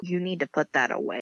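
normal talking voice

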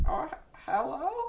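put-on breathy voice of an older woman. Acting out a spooky phone call scenario: older woman's voice. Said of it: "an older woman's voice picks up the phone".

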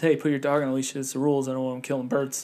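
put-on calm voice. Retelling what a birder said to a woman breaking the rules: retelling a very calm request. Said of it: "he very calmly says".

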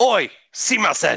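very high-pitched, loud hollered shout. Showing how to shout someone's name out, as a shouted call. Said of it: "How do you say it though when you shout it out?".

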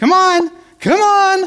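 very high, drawn-out cattle call. Imitating how another man calls the cows, imitating his higher voice. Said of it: "try to get my voice up higher like his".

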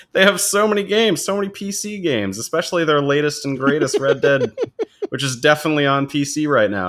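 high, plainly sarcastic, tongue-in-cheek tone. Video host talking about the games on a new launcher, sarcastic. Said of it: "I'm being sarcastic".

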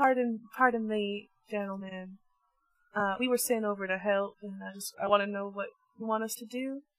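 timid, very meek voice. Approaching soldiers already at work to offer help: very meek voice. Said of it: "in a very meek voice".

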